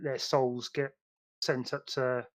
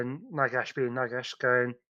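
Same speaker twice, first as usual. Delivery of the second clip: normal talking voice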